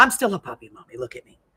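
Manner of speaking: silly, playful pet dog voice. Retelling how the dog still acts like a puppy, voicing the dog. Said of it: "She'll be like".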